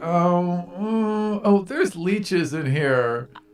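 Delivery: high, drawn-out, disgusted, grossed-out voice. Voicing a character who appears in a gross pit, disgusted. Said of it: "and she's like".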